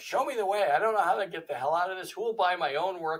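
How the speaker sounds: loud angry ranting. Retelling own past prayer while stuck and angry: retelling own angry rant. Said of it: "I had all that ranting going on".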